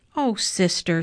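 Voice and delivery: ordinary talk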